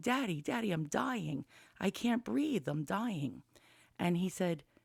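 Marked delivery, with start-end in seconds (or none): 0.0-3.4 put-on frantic, desperate, panicked crying out. Retelling a first panic attack, waking the father: imitating own panicked screaming. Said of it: "I started screaming".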